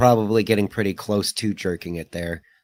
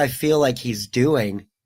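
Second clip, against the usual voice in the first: normal talking voice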